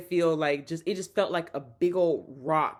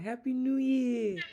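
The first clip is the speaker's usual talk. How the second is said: light put-on New York accent, pitched higher; 8 semitones higher than usual. Speaker repeats a man's greeting, copying his little New York accent. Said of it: "His little New York accent".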